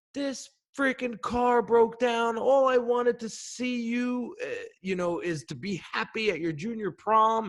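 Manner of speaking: acted out, very high, choked-up, hyperventilating sobbing. Retelling a father's words about a broken-down car: imitating father crying. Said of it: "he starts hyperventilating and he starts crying".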